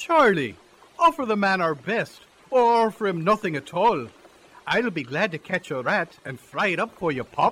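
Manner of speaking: sweet-sounding Irish brogue. Character offering food to a visitor, Irish brogue. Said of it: "the sweet sound of an Irish brogue".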